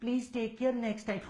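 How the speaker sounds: soft, slow, sickly sugary sweetness.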